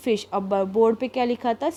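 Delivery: ordinary delivery, nothing marked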